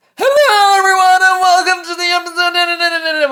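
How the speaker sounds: very high, loud screaming. Podcast host acts out his own past episode intro, retelling screaming into the mic. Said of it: "screaming into the microphone".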